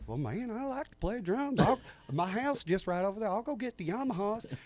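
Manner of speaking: put-on southern Arkansas accent. Retelling a guy offering to play drums, imitating his Arkansas accent. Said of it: "He comes up with that Arkansas accent".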